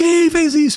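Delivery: put-on very high, angry-sounding yell. Retelling how the principal reacted after the bell rang: imitating someone yelling. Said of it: "a diretora gritando".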